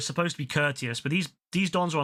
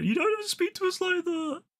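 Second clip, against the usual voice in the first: mock angry delivery, very high pitched. Retelling the offended reply of women who were told off: imitating angry women. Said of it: "they got so fucking angry".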